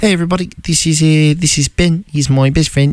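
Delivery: New Zealand accent. Talking with another person about accents, the speaker tries a New Zealand accent. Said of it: "it's really fun to say it like that".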